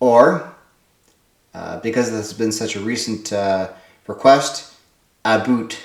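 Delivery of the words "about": about pronounced with a Canadian accent. Fulfilling a recent request with a Canadian 'about'. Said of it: "That's my Canadian uh, pronunciation of about just for you".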